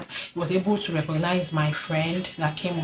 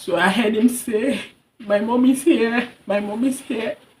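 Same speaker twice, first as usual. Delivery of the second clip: high, raised, tearful voice breaking while crying; 5 semitones higher, 6 dB louder than usual. A mother recounting the moment she arrived for her son, crying while speaking. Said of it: "I'm so sorry if I'm crying".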